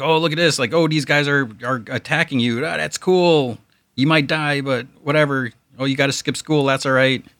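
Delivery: mock bubbling-over excitement, high, chattering. Describing a comic character's behavior, imitating Ted all excited. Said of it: "he's, like, all excited. He's like".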